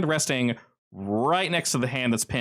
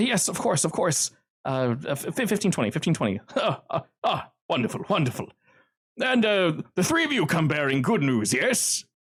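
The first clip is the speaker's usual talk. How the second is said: nervous, flustered stammer, higher; 5 semitones higher than usual. Voicing a frightened man who nods and answers a demand, nervous stammering. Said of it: "he nods and goes, uh, uh".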